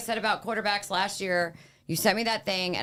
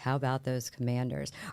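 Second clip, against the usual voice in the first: flat, lifeless, zero-energy deadpan monotone; 6 semitones lower, 5 dB quieter than usual. Asking about the Commanders, putting on no energy in voice. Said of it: "without any energy in my voice".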